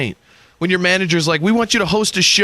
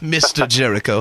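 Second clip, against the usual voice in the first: put-on pretentious posh English accent, lower; 7 semitones lower than usual. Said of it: "you have to say it with a pretentious English accent".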